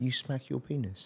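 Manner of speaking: put-on grave, dead-serious Singaporean accent. Retelling the doctor's question after blood work: imitating a very serious Singaporean doctor. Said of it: "he said it very serious, Singaporean".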